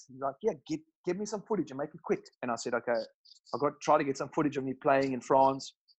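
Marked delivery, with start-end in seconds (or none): 0.4-2.2 very strong put-on South African accent, pitched up. Speaker quoting his dad, in a put-on South African accent. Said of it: "my dad's got a very South African accent. That's why I put it on".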